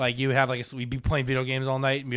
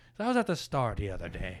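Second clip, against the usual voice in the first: put-on Irish accent, lower and quieter; 5 semitones lower, 5 dB quieter than usual. Retelling what a priest said on stage: imitating Father John's Irish accent. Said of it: "He was Irish".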